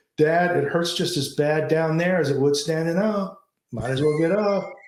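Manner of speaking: mild, mock, called-out delivery. Retelling what James told his dad mid-match, retelling a loud call. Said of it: "in a loud voice says".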